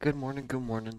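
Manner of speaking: drowsy, worn-out, sleepy morning voice. Saying good morning after three hours of sleep, tired voice. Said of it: "Sorry if I sound tired".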